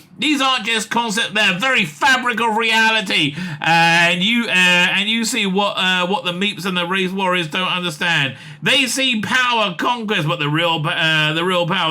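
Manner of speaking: ordinary talk, nothing marked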